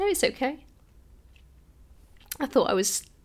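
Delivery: soft voice, fighting back tears mid-sentence. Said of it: "I'm gonna cry now".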